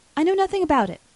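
very high, loud, terrified, frightened gasp. A woman, confronted by the narrator, answers while gasping in fright. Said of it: "she gasped affrightedly".

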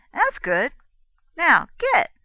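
very loud, bright, breezy, happy tone. A girl orders a man out of the cabin, in a happy ordering tone. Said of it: "in the same happy tone that had characterized her greeting".

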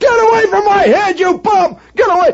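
acted-out wild, very high-pitched, mad hollering. Retelling how a homeowner came out of the house: imitating a man yelling like mad. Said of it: "comes this guy yelling like mad".

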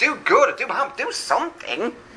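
very high, mocking, sarcastic jeering voice. Preaching on verse 23, voicing his taunt to the idols, really sarcastic. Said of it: "he gets really sarcastic".

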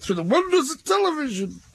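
very high, sloppy put-on comic voice. Remarking on catching bands through television, in a poor man's Johnny Vegas voice. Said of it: "in a kind of poor man's Johnny Vegas voice".

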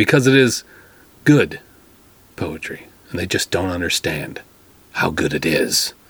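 low, dry, mocking boast. Introducing a new poem to the audience, sarcastic. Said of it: "This is sarcasm".

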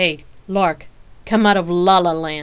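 very loud, drawn-out sarcastic call. Narrator reads Rain's reply to Lark, who is lost in thought, sarcastic. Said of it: "Rain replied sarcastically".

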